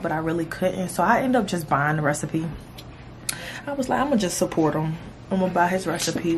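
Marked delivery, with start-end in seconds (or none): none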